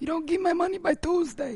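high, growling, mock mobster voice.

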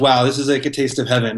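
ordinary talk, nothing marked

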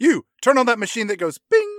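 put-on barking tone. Joining a movie retelling, imitating barked orders. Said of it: "he just starts barking orders around this table like".

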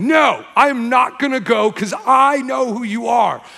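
mock shouting demon voice, high and drawn out. Retelling a demon shouting back during a casting out: imitating a demon shouting. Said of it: "the demon shouted at him like".

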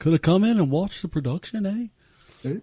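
put-on Liverpool accent. Talking with another speaker, in an attempted Liverpool accent. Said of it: "That was my attempt at a Liverpool accent".

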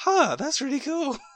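slow, surprised wondering tone. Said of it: "And I'm like".

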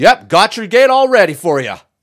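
mock shrill, loud, very high-pitched call-out. Retelling what the speaker said to a guy at a gate, retelling own loud reply. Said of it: "I was kind of loud".

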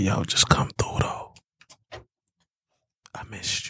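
soft, breathy, seductive whispered voice. During a live mic check, showing off a sexy voice: sexy voice. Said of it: "This is my sexy voice when I be trying to be sexy".

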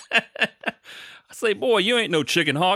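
very high southern cartoon rooster voice, crowing. Asked by a friend for his impersonation, doing a Foghorn Leghorn impression. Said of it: "my hype is your Foghorn Leghorn impersonation".

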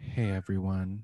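sultry sad voice. Voiceover artist practicing a sad read of a greeting, sad voice that sounds sultry. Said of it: "I need to work on my sadness".

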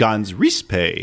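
pitch lift on middle word 'riz'. Saying the name so it sounds fancy: pitch lift on 'Riz'. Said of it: "you had to say it with a little lift in the middle".

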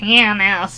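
the word pianist said with a nasal voice. Joking about pronunciation, showing pianist said in a nasal voice. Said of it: "Say it nasally. Like this".

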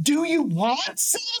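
mock very high, drawn-out child yell. Retelling a child yelling across an art gallery: imitating a child yelling. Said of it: "yelling across the gallery space".

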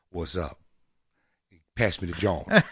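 very low voice with soul. A speaker shows the little soul he can put in his voice. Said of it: "I got a little soul in my voice".

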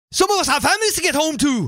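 very high, put-on movie character voice. Quoting a film character's line as an impression. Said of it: "let me give you my impression".

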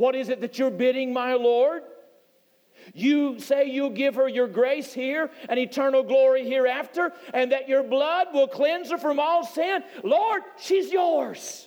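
high proclaiming shout, climbing as it goes. Storyteller recounting what a man shouted out, retelling a shout. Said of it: "Then Hill shouted out".

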